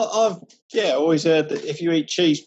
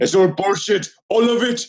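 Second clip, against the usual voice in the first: put-on Austrian accent; 3 semitones higher, 4 dB louder than usual. Asked by another speaker to hear it, doing an Arnold Schwarzenegger impression. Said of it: "I can do an Arnold impression".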